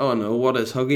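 normal talking voice

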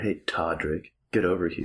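put-on low, seductive, sultry tone. Showing how the professor character could sound: put-on sultry voice. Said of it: "you can make it more sultry by".

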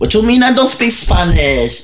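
put-on Puerto Rican street accent.

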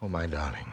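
adoring, romantic, lovey-dovey tone. Rehearsing a scene after being asked to say something romantic: romantic. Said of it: "say something romantic".

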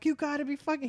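play-acted, high-pitched screamed outburst. Retelling what a man yelled while searching the house for them, retelling a scream. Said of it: "he's like screaming".

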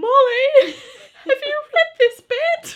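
mock nervous, trembling yell, very high and very loud. Recalling shouting down to the person in the room below, imitating a nervous quivering shout. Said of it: "nervous quivering in my voice".

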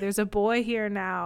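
normal talking voice

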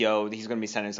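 ordinary talk

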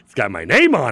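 mock puffed-up, proudest-ever tone, loud. Retelling holding something up to show someone, acting out great pride. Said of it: "I say with such, like, I'm so proud of this".

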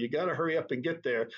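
ordinary talk

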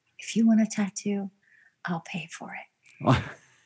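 put-on serious tone. Retelling what he said to them, the speaker imitates him getting real serious. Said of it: "And he got real serious".

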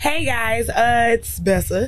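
exaggerated, put-on deep low voice. Speaker introducing herself to the group when her turn comes, put-on deep voice. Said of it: "Why was your voice so fucking deep?".

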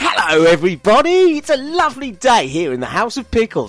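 jolly, cheerful, full of spunk. Following a direction to make it jolly and give it spunk: jolly, with spunk. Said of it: "Give me spunk".

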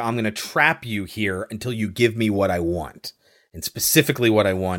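ordinary talk, nothing marked

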